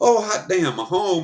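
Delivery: delighted, overjoyed happy dog voice. Telling a story about taking in a stray dog, voicing the happy dog. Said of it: "And he's like".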